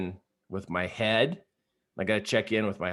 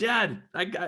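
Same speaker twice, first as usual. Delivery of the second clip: put-on very high-pitched shout; 9 semitones higher than usual. Retelling calling out to a dad through trees: imitating own yell to dad.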